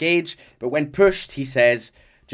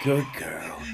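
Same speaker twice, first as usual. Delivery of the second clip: put-on sexy, intimate voice, lower and quieter; 7 semitones lower, 6 dB quieter than usual. Imitating a game character speaking to his horse: sexy intimate Arthur voice. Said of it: "it's just him leaning in and going".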